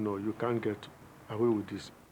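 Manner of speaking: plain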